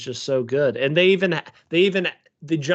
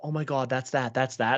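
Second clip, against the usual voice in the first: put-on whisper, quieter; 5 dB quieter than usual. Retelling what people nearby said during the movie: imitating someone whispering. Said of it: "kinda whispering".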